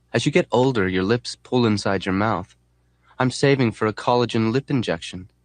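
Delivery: ordinary delivery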